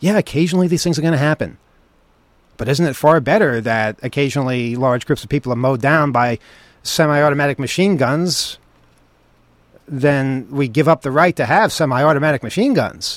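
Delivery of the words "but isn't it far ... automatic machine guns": normal talking voice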